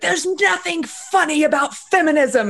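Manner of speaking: piercing, shrill, very high-pitched yell. Retelling how a feminist who followed them yelled: imitating someone yelling. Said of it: "at one point she yells".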